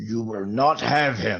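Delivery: firm, grim, resolute, determined delivery. Voicing a warrior who steps in front of a fallen body: grimacing, determined declaration. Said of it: "grimaces and says".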